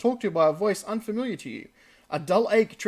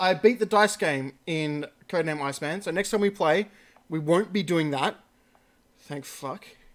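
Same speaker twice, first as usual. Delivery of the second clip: ordinary talk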